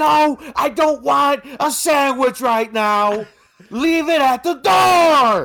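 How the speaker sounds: fake annoyed loud shout.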